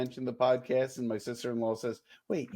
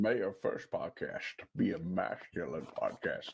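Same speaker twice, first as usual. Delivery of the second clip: put-on Scottish movie star voice, lower and quieter; 6 semitones lower, 5 dB quieter than usual. Reading a line after being told to do Sean Connery: Sean Connery voice. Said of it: "Sean Connery doing Marlon Brando".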